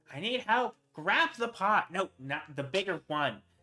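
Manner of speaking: high shouting heard in the background. Game narrator voicing a woman in the kitchen dealing with her children: shouting. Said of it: "you can hear her, like, shouting".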